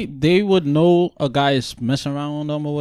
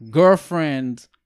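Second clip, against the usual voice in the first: put-on friend in girlfriend stressed hard with falling tune. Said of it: "emphasis on the friend".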